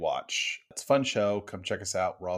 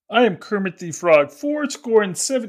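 high, loud, squeaked voice; 13 semitones higher, 10 dB louder than usual. Describing an imagined show idea, speaking in Kermit the Frog voice. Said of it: "in Kermit's voice the whole time".

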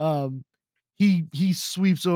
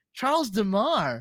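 sincere, cheerful, earnest voice with zero irony; 5 semitones higher than usual. Retelling a movie scene, answering a name question: imitating Curtis Armstrong, full smile. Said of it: "full smile, genuine, not a hint of irony".

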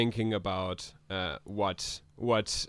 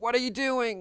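yelling, higher; 13 semitones higher than usual. Voicing a character who notices someone entering her mind: shouting. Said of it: "sort of shouts".

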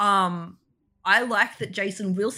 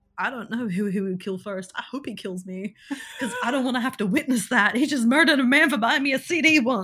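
put-on terrified voice, higher; 3 semitones higher than usual. Retelling a character's line at a party, imitating terrified voice. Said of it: "the terror in her voice is so good".

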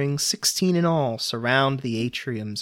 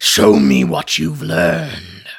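deep, booming, grinding growl, low and huge; 6 semitones lower, 9 dB louder than usual. The great mountain Cathaxatod speaks in its chamber: growl like two boulders grinding together. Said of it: "his voice sounding like two boulders being ground together".

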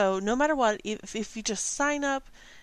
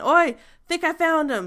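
very loud, high-pitched, carrying shout; 7 semitones higher, 8 dB louder than usual. Narrating a game, voicing someone shouting from the beach: shouting. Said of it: "you can hear shouting come from the beach".

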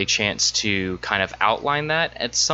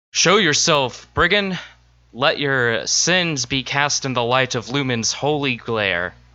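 righteous, bold holy knight voice calling out; 4 semitones higher than usual. Raising shield and warhammer, a knight challenges a hidden brigand, yelling. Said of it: "and he yells".

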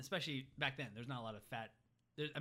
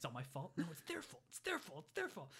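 angry, fuming, half-whispered muttering; 5 semitones higher than usual. Retelling a movie scene where Tony talks to himself: imitating Tony muttering angrily to himself. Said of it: "whispering to himself".

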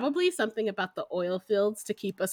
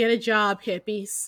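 mock-yelling, slower. Describing what his dad yells out the open door, retelling dad's yell. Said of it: "he'll yell".

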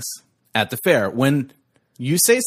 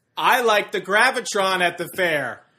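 raised voice, higher; 7 semitones higher than usual. Playing a game where each line gets louder: speaking louder. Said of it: "It's getting so much louder".

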